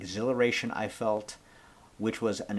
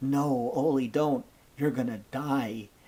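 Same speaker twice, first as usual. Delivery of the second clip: slow, put-on, earnestly worried child voice; 3 semitones higher than usual. Recalling what two kids told him at school, retelling kids' worried concern. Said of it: "genuinely kid concerned for me".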